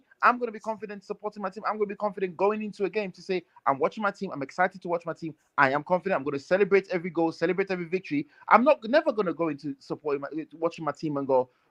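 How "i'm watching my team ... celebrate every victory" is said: ordinary talk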